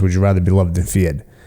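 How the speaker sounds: normal talking voice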